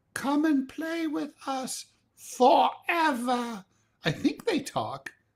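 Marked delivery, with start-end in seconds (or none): 0.1-3.6 put-on creepy English accent, high-pitched and slow. Giving an example from a horror film, the speaker quotes the twins: creepy english accent. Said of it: "example of the creepy English accent".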